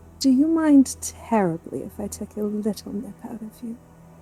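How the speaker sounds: softest, very quiet murmur. Narrating a character speaking as a boy leans down to her, very quiet softest tone. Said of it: "she very quietly says in like the softest tone".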